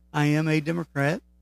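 ordinary talk, nothing marked

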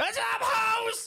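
put-on high, slow, loud old grandpa scream. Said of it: "And he just starts screaming".

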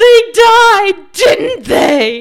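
very loud, very high, drawn-out tearful sobbing scream. Recalling yelling at him from the kitchen at a film's end, retelling a scream through tears. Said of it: "I'm screaming at him from the kitchen and through my tears".

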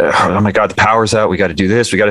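mock panicked child voice, put-on panic. Retelling the power going out, quoting a ten-year-old stepson; imitating a panicking kid. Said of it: "He's like panicking over this".

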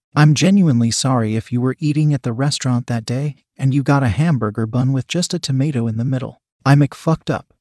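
plain reading voice

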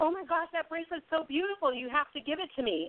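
teasing playful tone. Retelling what she said to a waitress at a restaurant, retelling a joking demand. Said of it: "Totally jokingly".

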